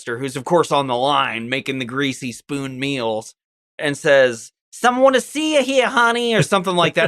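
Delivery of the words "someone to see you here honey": put-on, high 1950s New Jersey housewife accent. Retelling a film scene, a woman in a space diner calls the cook, fifties Jersey housewife accent. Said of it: "like fifties Jersey housewife accent".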